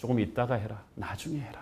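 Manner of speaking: soft, hushed, tempting devil-like whisper.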